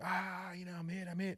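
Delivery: high-pitched screaming cry. Retelling a wounded buddy calling out that he's hit: imitating someone screaming. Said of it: "I started hearing screaming".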